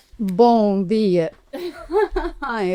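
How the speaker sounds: nervous laughter running through the spoken words. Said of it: "eu tô rindo porque é de nervoso".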